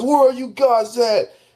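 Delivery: very high-pitched, whiny, griping tone. Retelling what another player said each time he died: imitating someone complaining. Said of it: "complaining every time he dies".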